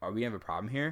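playful joking delivery. Retelling a joking remark made to a guy she was talking to, jokingly.

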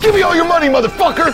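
sudden loud scary ambush shout. Jumping out of a hiding spot to scare passers-by: scary ambush shout. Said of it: "Charlie jumps out and goes".

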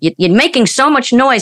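put-on high-pitched scolding yell. Retelling playing drums as a child: imitating mother yelling. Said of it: "my mother used to yell at me".

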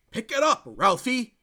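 shrill, very loud, high-pitched shout. Retelling a movie scene, shouting at a video phone: Keanu Reeves shout. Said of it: "he shouts at the screen".

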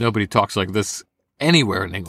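ordinary delivery

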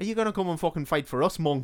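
put-on Irish accent. Retelling a story after being told to give the accent a go, do a Liam Neeson Irish accent. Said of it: "should I do the Irish accent?".

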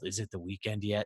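indistinct, hushed, soft mumble under the breath. Retelling how they answered a cab driver asking how it was going; retold mumble. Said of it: "And I mumbled".

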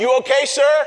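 loud, very high, called-out shout. Retelling a maintenance worker calling out from a vehicle to check on the speaker: imitating a shout. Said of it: "And he shouts".

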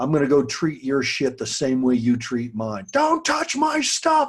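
put-on furious holler, rising and swooping. Retelling how he screamed at someone who mistreated his things, retelling a scream. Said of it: "I scream at him".

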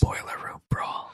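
soft, hushed, close-mic ASMR whisper. Talking about NXT match types, whispering into the mic. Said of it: "Or you're like whispering in the mic".

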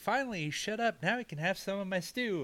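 high, gleeful character voice.

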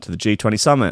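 ordinary delivery

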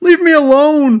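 shrill, terrified, very high and loud shriek. Recapping Sammy fleeing from Hardy into the stand; retelling a terrified yell. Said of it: "he just yells".

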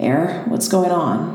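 slow, sleepy, groggy just-woken voice. Narrator reads a woman answering a phone call, groggy. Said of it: "A groggy feminine voice answered".

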